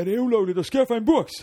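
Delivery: high, loud, mock innocent, naive-sounding voice.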